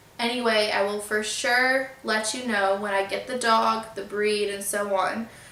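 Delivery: ordinary talk, nothing marked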